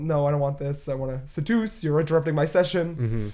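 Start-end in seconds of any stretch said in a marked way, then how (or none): none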